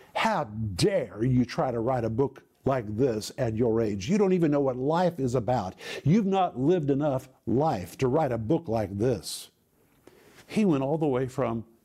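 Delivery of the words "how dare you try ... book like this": mock harsh, stern scolding tone. Retelling an author's reply on hearing the writer's age: imitating a scolding tone. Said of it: "And then his tone changed".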